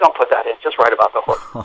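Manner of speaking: put-on weary whisper. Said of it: "he's down to a whisper".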